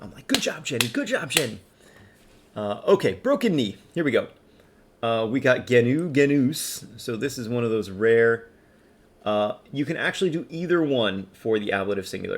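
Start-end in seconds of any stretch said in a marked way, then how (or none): 0.3-1.6 high-pitched barking coach-style voice. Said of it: "barking at you like coaches".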